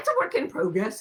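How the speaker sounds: put-on Australian accent. Describing an unfinished project, imitating Rowan Mangan's Australian accent. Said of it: "as she says in her Australian accent".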